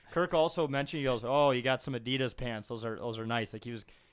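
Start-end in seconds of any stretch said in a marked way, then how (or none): none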